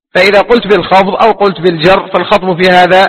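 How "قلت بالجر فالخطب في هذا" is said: ordinary talk, nothing marked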